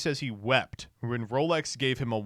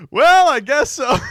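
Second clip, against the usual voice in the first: very high, very loud, drawn-out hesitant drawl; 13 semitones higher, 14 dB louder than usual. Replaying a candidate's answer about troll accounts: imitating the candidate's hesitant answer. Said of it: "He goes".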